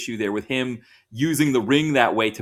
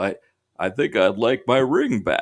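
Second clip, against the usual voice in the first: very slow, drawn-out delivery. Trying out a famous actor's line, sounding like Jimmy Stewart voice. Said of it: "I like your Jimmy Stewart impression".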